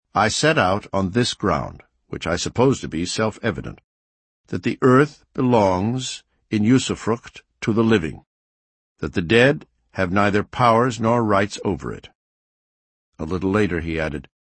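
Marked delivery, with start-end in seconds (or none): none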